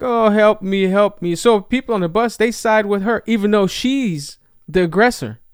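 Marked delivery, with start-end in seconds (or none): 0.0-1.3 mock crying voice, slower. Retelling a bus incident, the speaker imitates the girl on the floor crying. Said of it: "she's crying and she's she's like".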